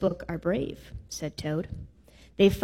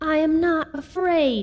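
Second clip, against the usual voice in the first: very high, slow, drawn-out exclaiming cry; 10 semitones higher, 4 dB louder than usual. A toad faces a big snake that wants to eat him, crying out. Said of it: "he cried".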